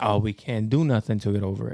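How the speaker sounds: plain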